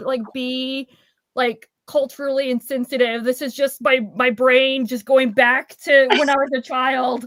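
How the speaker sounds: ordinary talk, nothing marked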